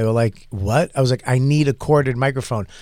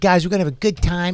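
put-on slight Boston accent with upbeat, peppy energy; 4 semitones higher than usual. Retelling his own early hosting to the crowd: imitating own past Boston voice. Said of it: "It's my little Boston voice".

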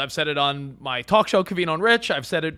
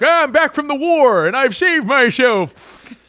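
put-on doddering old man voice, raised pitch; 7 semitones higher, 8 dB louder than usual. Imagining grandparents back from the war, in an old man voice. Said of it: "I don't think there's anything better than your old man voice".

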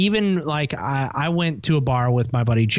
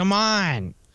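mock drunken talking, higher; 5 semitones higher than usual. Retelling own words at a bar while very drunk: imitating own drunk speech. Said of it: "But to him, it sounded like".

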